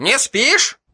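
lively, upbeat, bright, very high cheerful voice. Narrator reading a tv repairman calling the narrator on his mobile: cheerful, lively voice. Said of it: "прозвучал бодрый голос телемастера".

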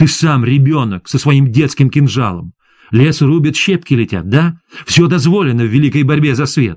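ordinary delivery

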